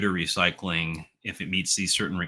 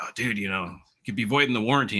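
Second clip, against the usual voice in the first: put-on alarmed half-shouted voice, a mild yell; 3 semitones higher than usual. Retelling how another it manager reacted when he cracked a processor open, retelling a yell. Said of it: "was like yelling at me".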